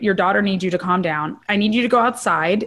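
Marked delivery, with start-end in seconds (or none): none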